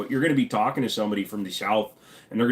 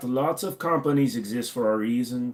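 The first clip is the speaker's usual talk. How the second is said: put-on German accent; 3 semitones higher than usual. Rereading a line after a chat request, put-on German accent. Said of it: "since he said the German, I will go like that".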